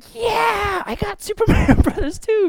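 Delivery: put-on thrilled, excited yell, very high-pitched. Retelling opening a longed-for game on Christmas morning: imitating own excited shout. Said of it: "I was so excited".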